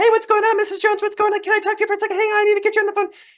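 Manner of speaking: very high-pitched talking voice. Showing how speaking to someone in a high-pitched voice comes across, high-pitched voice. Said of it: "talking in a high pitched voice".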